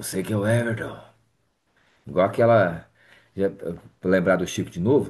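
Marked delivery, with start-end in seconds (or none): 0.0-1.0 dark, gloomy, somber phone voice. Retelling a 3 a.m. phone call, quoting the caller: imitating a gloomy voice. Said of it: "uma voz assim soturna".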